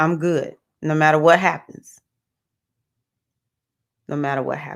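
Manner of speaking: emotional voice, welling with feeling, slightly moved. Speaker talking about a rough time, getting a little emotional. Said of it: "I'm getting a little emotional".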